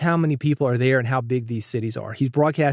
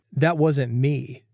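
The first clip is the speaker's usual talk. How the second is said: normal talking voice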